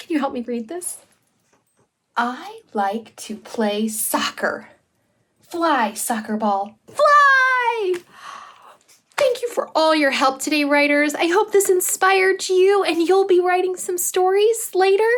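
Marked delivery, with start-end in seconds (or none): 5.5-7.9 very slow excited exclamation, "fly" drawn out. Reading a sentence aloud to show the writers an exclamation point: excited exclamation. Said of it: "put an exclamation point".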